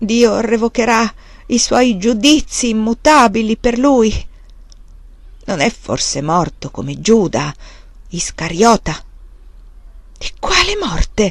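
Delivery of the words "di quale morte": frightened, anxious, pitched up. Narrator voices the prior answering the monk Magnus, frightened. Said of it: "Disse il priore spaventato".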